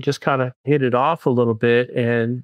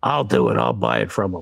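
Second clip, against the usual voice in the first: very deep, rough, gravelly voice; 7 semitones lower than usual. Retelling a rope team meeting when someone spoke up, gravelly voice, imitating Mike Gennaro. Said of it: "a real gravelly voice goes".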